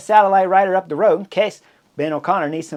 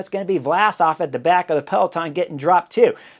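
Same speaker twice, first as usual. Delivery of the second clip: ordinary delivery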